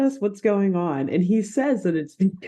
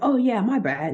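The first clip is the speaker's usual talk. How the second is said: deliberately poor fake Australian accent; 4 semitones higher than usual. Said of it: "this guy has a really bad Australian accent".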